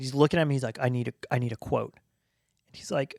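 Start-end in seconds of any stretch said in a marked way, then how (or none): 0.8-1.9 mock-angry man voice, much lower pitch. Retelling how a man about to be executed turned on him, imitating an angry man. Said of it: "He gets angry".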